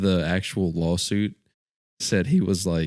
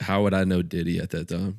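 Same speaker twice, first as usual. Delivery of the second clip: plain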